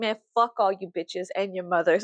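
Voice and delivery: mock hostile, defensive outburst. Retelling own past words after turning defensive: imitating own defensive outburst. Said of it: "I got hyper defensive and I became a man".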